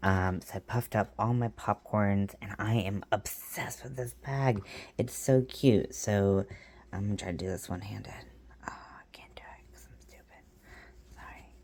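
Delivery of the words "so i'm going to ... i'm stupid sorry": hushed whisper, much quieter. Trying to work a bag one-handed while talking, whispering. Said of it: "I don't know why I'm whispering".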